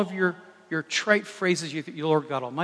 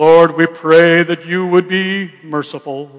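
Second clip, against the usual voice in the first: very loud, very slow, solemn put-on prayer voice; 12 dB louder than usual. Mocking a man who had a special voice for praying, in a put-on prayer voice. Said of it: "the prayer voice. They talk to you like this".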